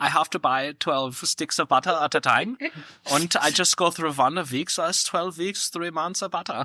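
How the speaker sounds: slight acted German accent. Retelling what a woman said to the speaker, in her little German accent. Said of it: "in her little German accent".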